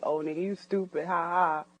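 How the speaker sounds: laughing while speaking. Retelling how the speaker laughed at what seemed a joke: imitating own past laughing. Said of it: "so you laughing like".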